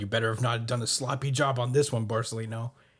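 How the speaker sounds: ordinary delivery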